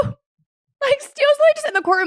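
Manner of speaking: very high, rushed incredulous outburst.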